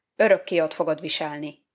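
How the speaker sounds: ordinary delivery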